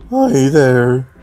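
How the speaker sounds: put-on voice, cracking all over the place. Trying out a voice for a nerdy character: really cracky voice. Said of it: "a really cracky voice".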